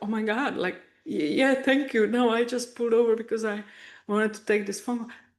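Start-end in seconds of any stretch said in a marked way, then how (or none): 0.0-2.1 put-on teary, stunned voice, higher. Retelling a police officer asking if she is okay, imitating her own teary stunned thanks. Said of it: "tears in my eyes".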